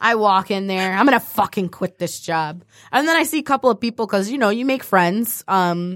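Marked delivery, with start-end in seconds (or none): none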